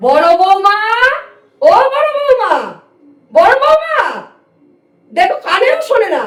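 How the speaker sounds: loud calling shout. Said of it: "আপনি এমন করে চিৎকার করছেন".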